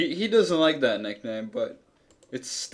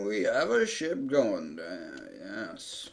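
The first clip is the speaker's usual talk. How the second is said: put-on slow, aged creature sound; 4 semitones lower, 5 dB quieter than usual. Game master voices Roger, an old minotaur, answering Aft: slow old minotaur voice. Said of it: "He's a very old minotaur. / He's a very old minotaur. ... He's a slow old minotaur. / He's a very old minotaur. / He's a very old minotaur. / He's a slow old minotaur".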